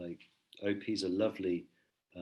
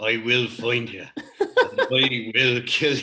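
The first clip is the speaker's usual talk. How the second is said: put-on very loud, bellowing American accent; 4 semitones higher, 12 dB louder than usual. After a co-speaker brings him up, quote the threat in Liam Neeson's American accent. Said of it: "Thank you for doing Liam Neeson's American accent".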